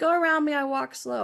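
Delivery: ordinary delivery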